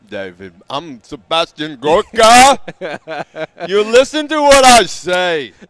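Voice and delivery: booming, very loud, full-volume voice. Asked by another speaker to do a Sebastian Gorka impression. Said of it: "do your Sebastian Gorka impression".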